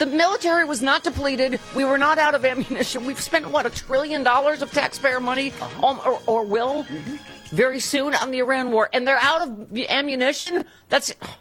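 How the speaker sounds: full-on, high-pitched screaming, ranting tirade. Reacting to a news headline for the audience, screaming. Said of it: "Sorry, I'm screaming".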